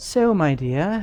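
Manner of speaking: enchanting voice. Voicing a female gnoll calling down to a player: magical tone. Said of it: "in a magical tone".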